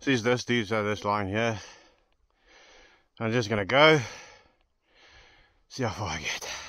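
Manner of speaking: huffing and puffing, out of breath. Starting on a tough line to see how far they get, huffing and puffing. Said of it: "I'm already huffing and puffing now".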